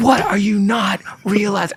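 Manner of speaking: acted, very high-pitched, frantic meltdown scream. Retelling being told to play the wedding anyway, re-enacting own screaming. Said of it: "I'm screaming".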